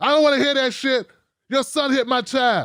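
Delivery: put-on furious, irate, angry woman voice. Retelling how a mother at the door confronted the speaker: imitating a very pissed-off mother. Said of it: "very pissed off with her child".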